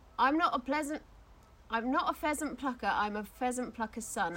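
ordinary talk

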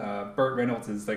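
plain

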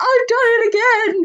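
mock very high, tearful, snivelling, whimpering voice. Discussing the weepy voice killer, the speaker imitates his weepy voice. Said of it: "the weepy voice killer".

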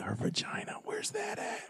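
soft, unvoiced whisper. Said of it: "He just leaned over and said".

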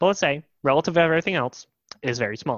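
argumentative pundit voice. Arguing about croutons with a friend, speaker presses the point: Ben Shapiro impression. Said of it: "Why do you sound like fucking Ben Shapiro?".

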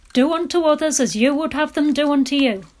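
stern, strict fatherly lecturing voice. Recalling his father quoting the King James Bible, in a mock-stern dad voice. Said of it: "in his best stern dad voice".

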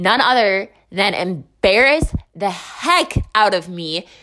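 normal talking voice

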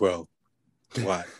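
put-on, super calm voice. Retelling what View said in the studio: Doctor View voice. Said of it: "You gotta say it in that Doctor View voice".

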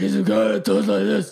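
creaky impression voice.

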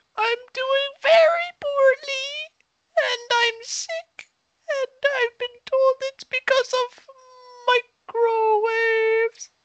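thin, frail, feeble high-pitched voice. Asked how they are doing, the speaker answers in a high, frail voice. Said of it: "Your voice has never sounded higher and more frail".

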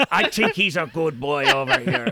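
put-on pirate voice with Irish accent. Showing how they talk as their game character: pirate Irish voice. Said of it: "That's my character".

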